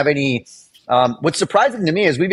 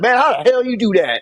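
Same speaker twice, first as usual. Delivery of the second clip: put-on southern American accent, pitched up; 8 semitones higher than usual. Telling how a guy watched him work, the speaker quotes him: dude's southern accent. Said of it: "like a southern accent".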